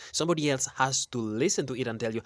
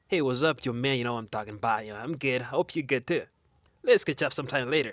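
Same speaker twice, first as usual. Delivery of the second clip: put-on American accent. Mocking a cousin back from two months in the us, fake american accent. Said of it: "he comes back with an American accent".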